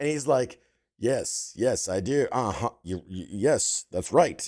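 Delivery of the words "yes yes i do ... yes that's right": deep, low, slow and proper-sounding delivery. Retelling an interview done fully in character: imitating the Old Spice guy in character. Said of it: "So he's like this the whole time".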